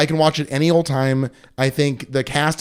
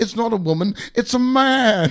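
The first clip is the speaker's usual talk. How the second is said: very slow, dragged, high goat-person voice; 8 semitones higher than usual. Quoting a movie scene: impression of a goat person. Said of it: "that was an impression of a goat person".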